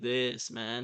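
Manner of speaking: perfect slow, drawn-out stoner drawl. Describing a film character, showing how he talks in a Matthew McConaughey-like stoner accent. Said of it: "a kind of perfect stoner accent".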